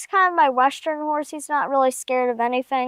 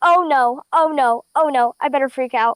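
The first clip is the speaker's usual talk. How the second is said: put-on panicked horse voice; 4 dB louder than usual. Voicing a horse that is scared of a big flag: voicing Tucker freaking out. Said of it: "he was just freaking out".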